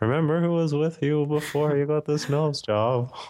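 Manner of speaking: acted-out high, strange, wobbly, quavering nervous voice. Describing a scene where George worries she's too attractive for him, imitating George's nervous voice. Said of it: "That's George's nervous voice".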